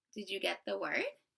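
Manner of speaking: ordinary talk, nothing marked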